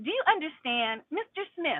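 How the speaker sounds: play-acted snide, condescending, sarcastic tone. Advising someone going to court over a ticket, imitating a sarcastic judge. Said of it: "You know how they like to get sarcastic".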